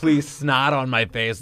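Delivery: put-on frantic pleading tone. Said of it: "knocking frantically, being like".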